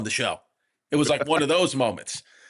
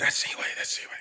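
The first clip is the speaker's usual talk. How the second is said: mock whisper, quieter. Retelling how a friend pointed out someone at the next table: imitating someone whispering. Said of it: "Vito's whispering".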